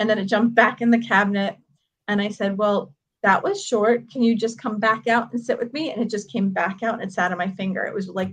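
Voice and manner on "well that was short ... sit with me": usual speaking voice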